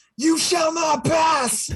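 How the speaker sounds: very high, very slow, drawn-out shout. Retelling grabbing a wand as security rushes in: retelling a shout. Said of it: "shouting, like".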